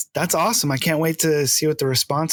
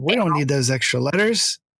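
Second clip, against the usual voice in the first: ordinary talk, nothing marked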